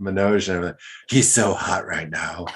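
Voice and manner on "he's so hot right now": put-on whisper. Retelling leaning over to someone during a meeting: retelling a whisper. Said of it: "And I whisper".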